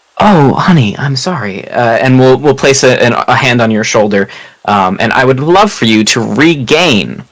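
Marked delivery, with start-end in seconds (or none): 0.2-1.7 consoling, comforting voice. Voicing Azrael, who pulls a hurting player close: voicing Azrael. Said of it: "Azrael fully takes you in, uh, and goes".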